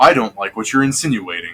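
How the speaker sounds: stern, disapproving voice, held in check. Retelling how he objects without getting violent, imitating his stern voice. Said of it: "he does say in like his stern voice".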